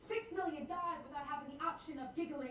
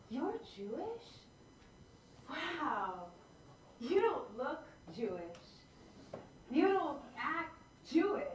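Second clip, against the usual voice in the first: play-acted admiring tone with drawn-out "wow"; 3 dB louder than usual. Retelling what a guy at a bar said: imitating a complimenting tone. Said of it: "he says it in this tone that sounds like he's complimenting me".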